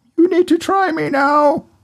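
high-pitched, smiling, bubbly bubble voice. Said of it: "the bubbles in the glass are smiling at me going".

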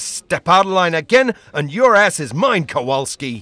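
tough, harried, hard-nosed but fair voice. In a comedy sketch, a police lieutenant warns kowalski, tough harassed lieutenant. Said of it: "You just made harassed lieutenant, tough but fair class".

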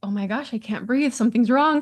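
mock panicked, rushed, freaking-out voice. Speaker retells a panic attack in the car, quoting their past self: reliving a panicked moment. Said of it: "I'm freaking out".

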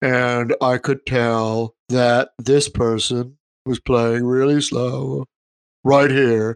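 tedious, uninspired, dull, boring delivery. Retelling a boring metal guy from a YouTube video, imitating a boring voice. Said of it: "And his voice was like this".

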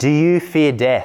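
put-on blend of French, Scottish, American accents. Retelling a scene, Jones questions a trembling survivor aboard his ship; Jones's weird mixed accent. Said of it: "he says in a sort of weird Frenchy, Scottishy, American accent".

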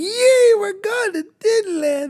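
play-acted thrilled children's voice, very high and excited. Parent recalls their young kids hearing of a Disneyland trip; imitating excited kids. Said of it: "They're so excited in the back of the car".

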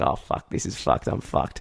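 mock-scared voice. Telling of a driver who chased them after they yelled at him, retelling their scared panic. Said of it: "And I was so scared".

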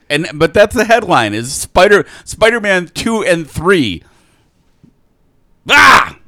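exasperated, high, loud frustrated yell. Complaining to the others about a news headline, yelling. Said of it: "why is he yelling at me?".

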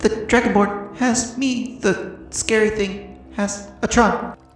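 light, small character voice. The game master relays a message to the players in Cha's small light voice. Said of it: "You'll hear a small light voice".

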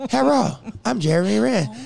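put-on American English, Chinese accent. Imitate someone giving their name on a voicemail, in a put-on Chinese-American accent. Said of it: "I love that fucking accent so much".

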